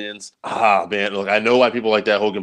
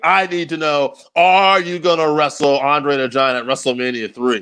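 high, frantic, desperate, worked-up, pressing, demanding rant; 6 semitones higher than usual. Retelling a wrestling segment where Piper finally flips out: imitating Piper flipping out. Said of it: "Piper is just, you know, flipping out finally".

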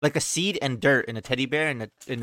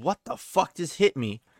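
furious, super angry dad outburst; 4 semitones higher than usual. Retelling the speaker's dad on the floor after being hit, imitating him super angry. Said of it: "super fucking angry".

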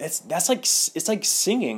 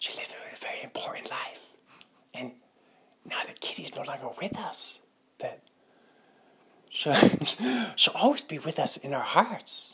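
soft, weighty, earnest, hushed stage whisper; 5 dB quieter than usual. Trying to figure out a Christopher Walken impression, doing a Christopher Walken whisper impression. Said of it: "how does he do the whisper?".

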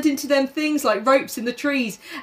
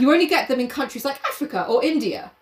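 normal talking voice

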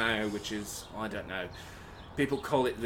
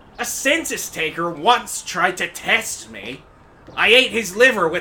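put-on Irish accent; 8 semitones higher, 13 dB louder than usual. Trying out accents with others, delivering a line in an irish accent. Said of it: "how about here's an Irish accent?".

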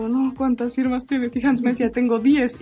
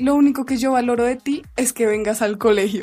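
ordinary delivery

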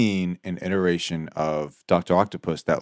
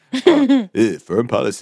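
raised put-on voice with wide swooping pitch; 5 semitones higher, 5 dB louder than usual. Doing a quick impression for the others: Obama impression. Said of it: "but we can do Obama".

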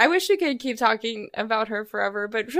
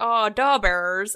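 over-the-top, exaggerated Chicago accent. Describing an old SNL skit about the Chicago Bears, SNL skit Chicago accent. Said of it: "SNL skit where they'd be like".

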